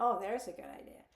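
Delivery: dry, sarcastic, mocking tone meaning the opposite. Example of sarcasm, replying to a husband's date idea: sarcastic tone. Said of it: "that is sarcasm. I say it, but I mean something else".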